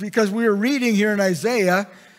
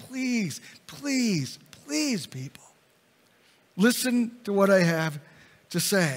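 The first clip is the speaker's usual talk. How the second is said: mock imploring, repeated please, emotional begging tone; 6 dB quieter than usual. Retelling how John the Baptist spoke to the people: John the Baptist begging. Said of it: "it was this begging".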